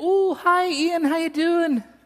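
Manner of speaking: put-on Scottish accent, very high pitch. Retelling how their mother answered a call from Scotland, in a Scottish accent. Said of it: "She gets a Scottish accent whenever she talks to people from Scotland".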